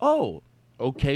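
sarcastic "oh okay" with wide-swinging pitch.

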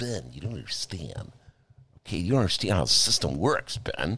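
derisive, mocking send-up voice. Podcast host imitating his liberal listeners talking to him, in a mocking impression. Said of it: "are you doing an impression of?".

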